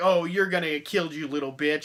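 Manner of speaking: smart-mouthed, snarky, taunting horror-villain jeer. Retelling a line from the movie, imitating snarky Doug Bradley. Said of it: "a snarky asshole".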